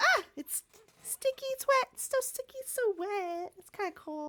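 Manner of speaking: very high, squeaky tiny creature chatter voice. Voicing the little furry creature that lands in Rocky's hands: voicing a little furry creature. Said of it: "He's like".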